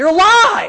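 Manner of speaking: very loud, booming, high-pitched, dead-serious shout. Retelling an old acquaintance's greeting after years apart: retelling a loud, serious shout. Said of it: "like real loud".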